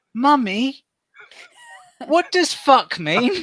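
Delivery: put-on tiny, very high little baby voice. Retelling a moment from a graduation show, quoting a child in a tiny baby voice. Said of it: "a little baby tiny voice just going".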